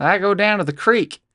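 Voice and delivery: put-on country accent. Arguing over how to say creek, the speaker demonstrates it in a country accent. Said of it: "Try saying creek in a country accent".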